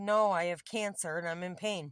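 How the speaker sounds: usual speaking voice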